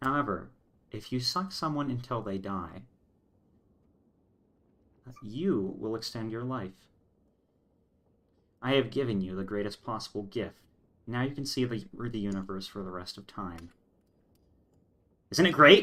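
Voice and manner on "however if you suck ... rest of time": serene, unruffled, even, soft, calm voice. Speaker retells what she said, retelling in a completely calm voice. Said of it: "like this this completely calm voice".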